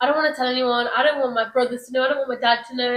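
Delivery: ordinary talk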